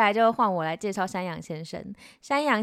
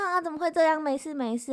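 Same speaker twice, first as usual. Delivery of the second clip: mock consoling, pitched-up, soothing, comforting tone; 8 semitones higher than usual. Retelling how a friend comforted the speaker: imitating a friend comforting. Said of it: "安慰我第二次".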